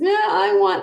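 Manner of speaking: put-on whining like a fussy little kid. Showing what children sound like when they whine, imitating a whiny child. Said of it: "when you whine, and that sounds like this".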